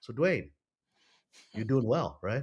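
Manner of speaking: "right" said level and flat, no rising pitch. Acting out the call as the all-knowing character: imitating a declarative statement. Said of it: "He's gonna declaratively state that".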